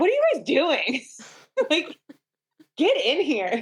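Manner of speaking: high, swooping, yelled scolding outburst. Retelling yelling at the birth team during labor: imitating own yell. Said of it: "I kinda yelled at them".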